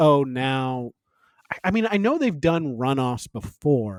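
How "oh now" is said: ordinary delivery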